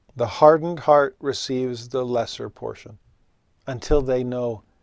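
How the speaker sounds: ordinary delivery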